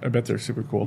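quiet, flat, unenthusiastic deadpan monotone. Answering a friend who mentions a cop buddy's stories, flat and unenthusiastic. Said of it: "You said that so unenthusiastically".

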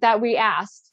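normal talking voice

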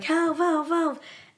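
put-on high screaming cries, one after another. Telling a story, the speaker acts out him crying for help: imitating someone yelling for help.

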